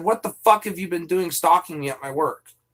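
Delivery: ordinary talk, nothing marked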